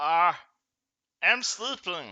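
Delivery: thin, high, squeaky little voice. Acting out the reply someone gives in a game: squeaky voice. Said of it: "a equally squeaky voice will reply".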